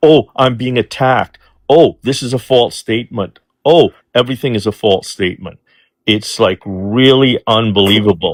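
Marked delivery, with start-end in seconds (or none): none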